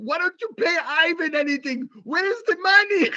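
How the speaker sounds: put-on high-pitched Russian accent. Quoting the speaker's mom, in a Russian accent. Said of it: "The Russian accent".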